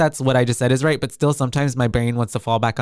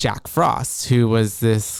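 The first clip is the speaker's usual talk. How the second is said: ordinary talk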